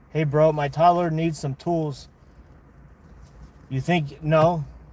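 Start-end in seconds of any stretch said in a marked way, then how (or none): none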